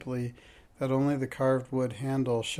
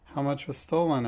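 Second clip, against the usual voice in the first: plain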